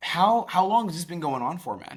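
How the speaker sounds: genuinely curious tone. Demonstrating tonality while asking a question, curious tone. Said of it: "Curious tonality, embodying curiosity and being authentic would be".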